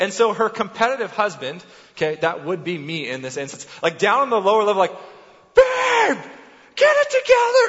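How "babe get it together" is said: very high-pitched, stretched-out, drawn-out screaming. Recounting a timed challenge from the lower level, retelling his own screaming. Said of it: "He's like screaming at her".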